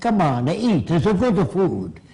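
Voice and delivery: speaking with Italian accent.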